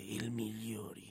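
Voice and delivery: slow, creaky suspenseful whisper.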